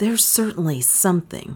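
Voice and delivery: hushed whisper. Watching the closed billiard-room door, the narrator replies to Beaumont in a whisper. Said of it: "I whispered".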